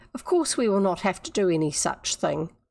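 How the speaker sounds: ordinary delivery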